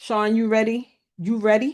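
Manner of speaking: put-on New York accent. Turning to another person in the group, New York accent. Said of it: "That's my New York voice".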